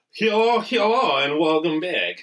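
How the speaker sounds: put-on Russian accent. Opening the show, a host greets listeners in a put-on russian accent. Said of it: "Are you Russian?".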